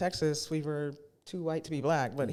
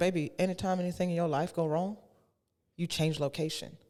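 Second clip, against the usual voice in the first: Southern accent impression; 2 semitones higher than usual. Retelling her mom's advice about running from problems, in mom's southern accent. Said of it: "in her southern accent".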